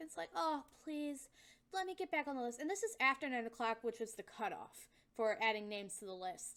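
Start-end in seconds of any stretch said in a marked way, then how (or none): 0.3-2.6 put-on flirtatious, pleading tone. Retelling how a woman asked the desk worker to be added: imitating a flirtatious plea. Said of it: "all flirtatious-like".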